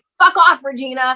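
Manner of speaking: acted-out, cross, angry telling-off tone. Retelling how she used to answer the voice in her head: imitating own angry retort. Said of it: "Like, angry".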